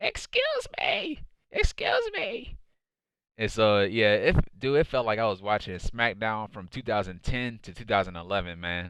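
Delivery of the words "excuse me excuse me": stretched out, pitched way up. Retelling how Vickie Guerrero came out: imitating Vickie Guerrero screaming. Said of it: "came out screaming to the top of her lungs".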